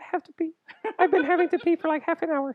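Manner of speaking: very high, tiny, squeaky little voice. Retelling how she announced she had to pee, imitating a squeaky voice. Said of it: "It just squeaks out of her".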